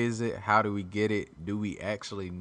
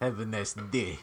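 mock angry Russian accent. Speaker joking that Russians always sound angry, in a mock angry Russian accent. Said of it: "They sound angry".

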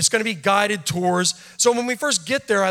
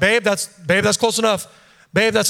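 ordinary talk

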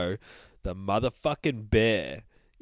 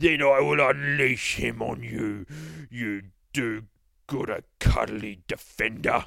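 slow, drawling Cockney boogeyman monster voice; 3 semitones higher, 3 dB louder than usual. Reading the book aloud, voicing the boogeyman as the Cockney from The Mighty Boosh. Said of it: "says the fucking boogeyman. ... maybe we'll read him as the Cockney from The Mighty Boosh".

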